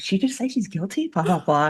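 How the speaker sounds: hushed murmuring half-whisper. Retelling a courtroom scene where the jury murmurs and half-whispers. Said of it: "murmuring and whispering".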